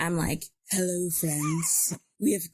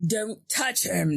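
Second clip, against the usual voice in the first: persuasive, coaxing voice working to win listeners over; 2 semitones higher than usual. Warning others off touching him in persuasion voice. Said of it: "That's my persuasion voice".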